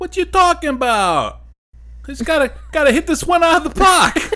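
put-on New York accent. Doing a good Staten Island accent, as the listener points out. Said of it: "That's your good Staten Island accent".

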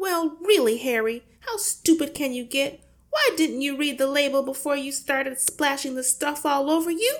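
crying out scoldingly. The mother scolds Harry in front of Matilda, crying out scoldingly. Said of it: "the mother cried".

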